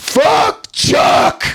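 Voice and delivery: play-acted shrill, rasping shout, full volume, very high. Retelling standing up during a meal where talking isn't allowed, shouting as loud as possible. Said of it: "as loud as I could".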